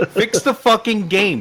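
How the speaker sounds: high, shrill yelling. Talking with others about Gran Turismo, the speaker is yelling. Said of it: "Sorry, I'm yelling at everybody".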